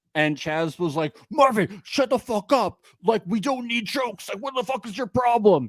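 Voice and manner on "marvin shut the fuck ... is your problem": mock heated, really mad angry outburst. Recapping episode one, speaker acts out Chaz's reply to Marvin: imitating Chaz, mock-angry. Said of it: "And he was like really mad".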